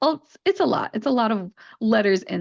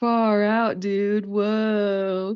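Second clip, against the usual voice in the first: very slow California surfer accent with drawn-out "whoa". Showing learners the surfer way of speaking: surfer accent. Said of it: "that is the accent that I'm talking about".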